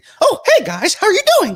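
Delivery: very high, loud cartoon mouse voice. Showing a voice that nobody expects from him: Mickey Mouse voice. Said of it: "nobody expects Mickey Mouse to come out of a guy like me".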